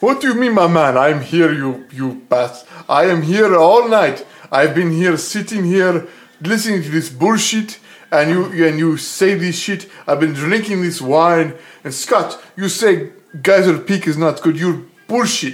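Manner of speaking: loud, thick, fake Australian Russian accent.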